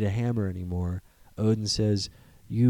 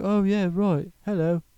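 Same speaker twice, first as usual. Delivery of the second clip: put-on English male accent, pitched high; 11 semitones higher than usual. Describing a stone gladiator character's voice, doing an english accent impression. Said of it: "He was an English guy. He's like".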